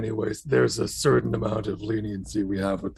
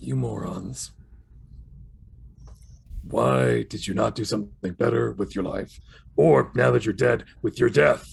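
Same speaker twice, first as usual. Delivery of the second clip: stern, disappointed, scolding monster creature voice. Voicing the creature as it walks down the steps toward the group, creature voice. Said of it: "The creature walks down the steps closer to them and just kind of goes".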